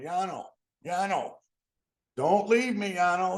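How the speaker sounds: high, very loud, drawn-out scream. Retelling how someone left behind screamed at the departing caboose: imitating someone screaming. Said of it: "he's screaming at him".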